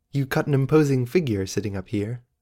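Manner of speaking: ordinary delivery, nothing marked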